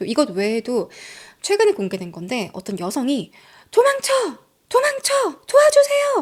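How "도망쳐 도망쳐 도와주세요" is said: woman's high, loud, desperate scream. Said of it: "이렇게 소리치는 것도 있어요".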